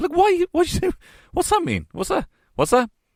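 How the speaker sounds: very high, swooping, baffled, feigned confusion. Showing how to answer someone's greeting: playing ignorant. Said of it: "play the same ignorance".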